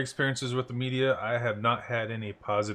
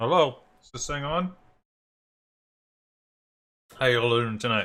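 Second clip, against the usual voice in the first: speaking with full mouth; 4 dB louder than usual. Speaker greeting the audience at the start, talking with mouth full. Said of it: "got my mouth full".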